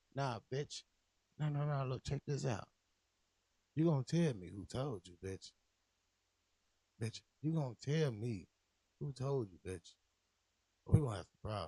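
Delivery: calm, smooth, collected, cool voice. Retelling how a man talks, the speaker does him in a mock-calm pimp voice. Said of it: "he's saying it all calm".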